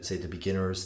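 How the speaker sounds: plain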